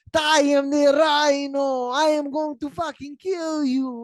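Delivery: put-on very high, slow screaming in an awful Russian accent. Recapping a Spider-Man movie scene, doing Rhino screaming in a bad Russian accent. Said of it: "in the worst Russian accent possible".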